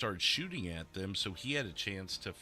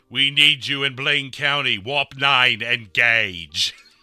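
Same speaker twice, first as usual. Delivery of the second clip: grand, commanding, booming voice, very loud; 5 semitones higher, 17 dB louder than usual. Ask whom you sound like, then demonstrate an attempted James Earl Jones or Patrick Stewart impression. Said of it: "do I sound more like James Earl Jones or Patrick Stewart".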